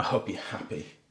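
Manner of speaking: seething, very quiet, barely voiced angry whisper. Testing whether the word happy can be said that way, speaker demonstrates: saying it angrily. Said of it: "you can't really say it angrily".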